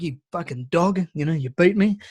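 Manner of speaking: put-on angry devil voice, ranting. Telling a story about a man who beat the devil at poker, imitating the devil's angry outburst. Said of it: "the devil was really fucking angry".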